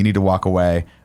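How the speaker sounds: ordinary talk, nothing marked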